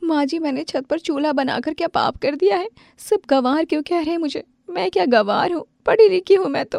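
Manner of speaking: crying through the words, tearful, pitched very high. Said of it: "तुम रो क्यों रही हो?".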